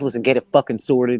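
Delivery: put-on annoyed, unhappy voice. Retelling Jeffrey's order to sort it out: imitating Jeffrey. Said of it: "and then he's like".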